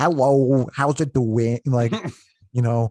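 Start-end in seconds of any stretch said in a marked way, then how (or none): 0.0-1.6 strange, slow, affected put-on voice. Complaining about a cringe album, imitate how he sounds at the beginning: weird put-on voice. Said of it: "he puts on like a weird voice at the beginning".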